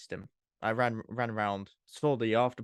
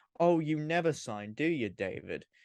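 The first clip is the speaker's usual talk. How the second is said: mock angry, slow, accusing tone; 5 semitones higher than usual. Retelling a woman yelling at david in front of everyone; retelling an angry shout. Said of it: "As loud as she possibly could in the most like angry voice ever".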